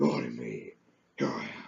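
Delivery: deep, gravelly heroic voice. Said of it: "That's my Batman impression".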